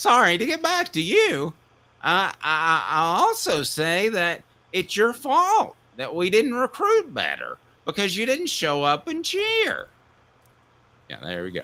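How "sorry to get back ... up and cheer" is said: put-on drunk, slurred voice, higher pitched. Answering a listener question about losing more games in Jerry Green voice. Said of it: "So in my Jerry Green voice".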